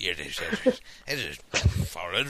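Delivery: put-on old man voice, very low and slow.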